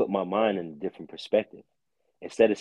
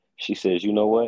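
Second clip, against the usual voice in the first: usual speaking voice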